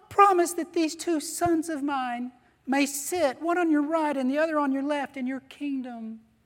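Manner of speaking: pleading mother voice. Retelling the story where the mother kneels before Jesus; James and John's mom impression. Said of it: "this is my impression of James and John's mom".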